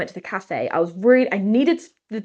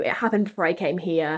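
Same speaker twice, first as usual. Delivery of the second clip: normal talking voice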